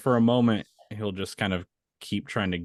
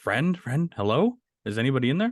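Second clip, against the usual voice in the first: calling out but holding it back; 4 semitones higher than usual. Calling through to whoever is past the ones blocking the path, in a hushed yell. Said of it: "in a more hushed tone yell through".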